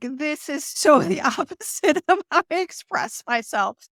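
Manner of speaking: talking through hard laughter. Explaining why a remark is so funny, laughing while talking. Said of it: "The reason why I'm laughing so hard".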